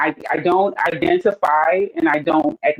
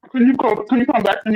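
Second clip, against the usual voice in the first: talking around a mouthful of food, slightly high; 7 semitones higher than usual. Asking the host to come back later, talking with food in mouth. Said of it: "I just had to put some food in my mouth".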